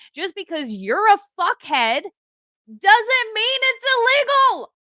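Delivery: heated near-yell, barely held back, rising high. Ranting about what counts as stalking and harassment: nearly yelling. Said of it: "I'm trying not to yell".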